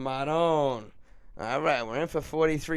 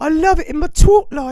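very high, very loud, shrill put-on British accent; 14 dB louder than usual. Playing a joke character for listeners, in a put-on British accent. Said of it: "now I'm from fucking Britain".

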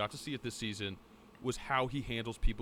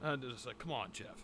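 usual speaking voice

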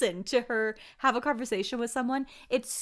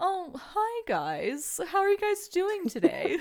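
swooping, affected, put-on posh rich elderly voice; 7 semitones higher than usual. Imitating a woman walking in and greeting everyone, put-on rich old-person voice. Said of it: "her voice sounds like someone trying to do, like, a rich, old person voice".

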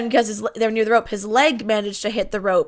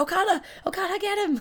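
mock yelling, pitched up; 10 semitones higher, 7 dB quieter than usual. Retelling the referee cheering for both wrestlers: imitating the referee yelling. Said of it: "Sometimes he's yelling".

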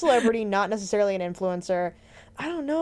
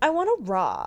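put-on very bored-sounding California accent. Quoting a line from the movie: Emma Watson in a bored California accent. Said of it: "a very bored California accent".

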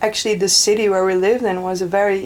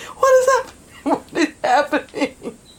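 high panicked wail through laughter. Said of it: "laying on the ground, like".

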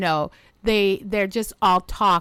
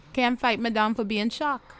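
put-on Trinidadian accent; 3 semitones higher than usual. Quoting what a woman said, in a Trinidadian accent. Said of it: "I'll do it".

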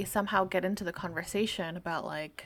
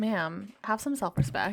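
normal talking voice

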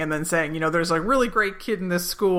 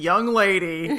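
mock stern father voice. Retelling a scene, playing Michael trying to act as her stern dad. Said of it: "he actually tries to be, like, her stern dad".

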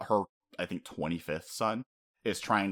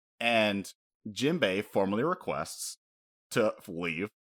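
normal talking voice

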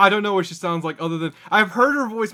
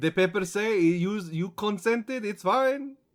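exaggerated French accent; 4 dB quieter than usual. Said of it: "a stereotyped Frenchman".

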